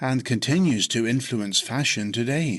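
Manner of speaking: ordinary talk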